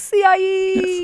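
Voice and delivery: stretched, high-pitched mock yell.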